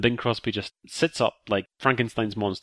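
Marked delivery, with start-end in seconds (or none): none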